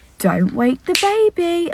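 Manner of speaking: drawn-out, slow, high spell-casting incantation voice. Retelling a man on public transport looking into the pram, imitating his spell-casting tone. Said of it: "like as if he was putting a spell on her".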